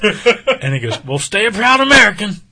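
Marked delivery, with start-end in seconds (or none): 1.0-2.3 put-on very high-pitched, loud, hollering old man voice. Retelling an old man's parting words as they were leaving, in an old man voice. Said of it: "That was my old man voice".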